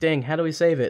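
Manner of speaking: ordinary talk, nothing marked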